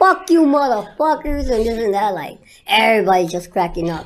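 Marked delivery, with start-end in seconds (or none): 0.0-1.5 high-pitched screaming with cursing. Recounting screaming at the people at the airport who were looking at him, retelling a scream. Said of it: "screaming at them".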